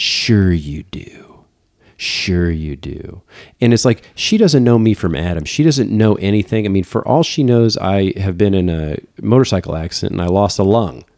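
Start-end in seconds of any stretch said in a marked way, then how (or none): 0.0-3.2 very slow, scornful, disbelieving sneer. Retelling what a patron in the next aisle said: imitating a scowling patron. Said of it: "she gives me a big scowl".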